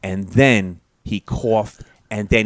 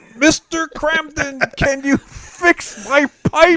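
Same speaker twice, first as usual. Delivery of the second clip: very high, very slow, drawn-out yell. Acting out neighbors asking for repairs from the hall: imitating a neighbor yelling. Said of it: "Everybody yelling in the".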